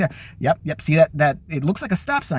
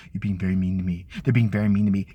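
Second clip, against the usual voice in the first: mocking, very low-pitched voice; 9 semitones lower than usual. Mocking how the president always complains: mocking Donald Trump impression. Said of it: "what does he always say? His little thing".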